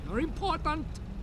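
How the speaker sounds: put-on heavy Russian-style villain accent.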